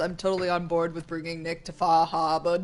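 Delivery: very bad put-on Boston accent. Agreeing to a plan mid-conversation, in a bad put-on Boston accent. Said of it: "That was like my worst Boston accent ever".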